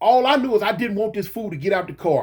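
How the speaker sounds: ordinary delivery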